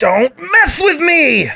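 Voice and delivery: very high, very slow, drawn-out character voice. Recalling a scene with Ed from Fullmetal: Ed voice. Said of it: "that's the only scene I remember".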